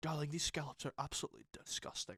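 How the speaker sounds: whispered, scolding, breathy put-down tone. Imagining Gordon Ramsay guest-starring and judging someone's food, Gordon Ramsay impression. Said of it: "He'll be like".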